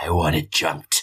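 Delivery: acted very low, menacing grumble. Retelling a scene where a woman grabs a man's collar, retelling a grumble. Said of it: "she like grumbles into his face".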